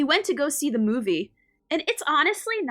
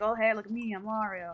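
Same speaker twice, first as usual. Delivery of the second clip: put-on plain American voice, quieter; 7 dB quieter than usual. Recalling a meme about the Mario voice actor: Chris Pratt as Mario voice. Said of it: "remember that one meme where he's like".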